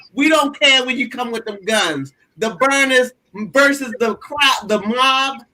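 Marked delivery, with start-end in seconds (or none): none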